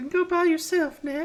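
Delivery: put-on very high girl's voice. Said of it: "Megan is a girl's voice".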